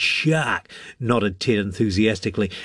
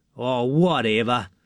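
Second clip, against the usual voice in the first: dismissive, scornful, sneering tone. Jack dismisses Hemi's story about being pulled under the water: sneering. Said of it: "sneered Jack".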